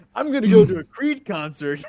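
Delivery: put-on big caveman voice. Doing an impression of Kinston for the others: Kinston impression. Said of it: "That's my Kinston impression".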